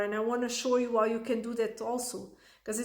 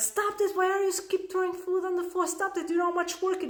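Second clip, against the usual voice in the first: imitated scream, higher; 8 semitones higher than usual. Retelling the moment she yelled at her toddler: imitating her own scream. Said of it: "I screamed at him".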